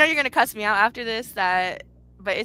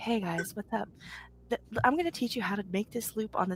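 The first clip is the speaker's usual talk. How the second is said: text-to-speech AI voice, narrating; 11 dB quieter than usual. Imitating how the other host sounded in her TikTok tutorial, like an AI voice. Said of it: "I thought you were using an A I voice".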